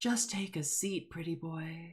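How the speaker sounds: echoing half-whisper, close in the ear. The narrator voices an illusion half-whispering in a character's ear: echoey half-whispery voice. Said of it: "an echoey, whispery voice whisper in his ear".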